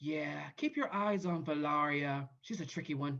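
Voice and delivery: hushed, secretive half-whisper. A player voicing a winged creature speaks to another character, half-whispering. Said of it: "I'll whisper whisper to him".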